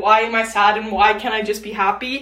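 ordinary talk, nothing marked

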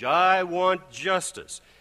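demanding tone growing in force. Recounting the host repeating his demand across the table: retelling words with growing force. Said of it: "with growing force".

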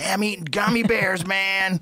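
high voice with words drawled out. Imitating a friend who ate candy all day, imitating a friend's voice. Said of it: "I can't do his voice either".

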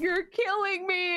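high, howling, wailing sob. Retelling a dog's reaction to being brushed: imitating a dog screaming and sobbing. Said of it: "German Shepherd or Husky levels of screaming and sobbing".

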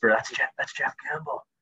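hushed little whisper, breathy and soft. Retelling how people in town notice him: imitating a little whisper. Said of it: "little whisper".

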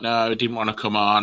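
ordinary talk

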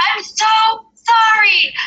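very high-pitched yell, cracking up with laughter. Retelling yelling an apology over his shoulder on a trail run, retelling a laughing apology. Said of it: "and just cracking up".

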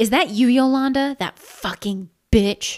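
loud, high-pitched roaring outburst. The woman from the attic calls out to Yolanda: roaring. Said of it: "roared the woman from the attic".

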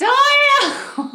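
loud shout. Playing a character calling out at a gate at night: yelling a name. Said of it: "And then she just yells".

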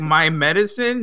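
ordinary talk

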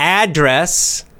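ADdress, first syllable stressed with rising pitch.

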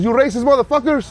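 put-on thick Mexican accent. Quoting a Mexican woman who has a thick accent, attempted thick Mexican accent. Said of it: "Why you sound Indian?".

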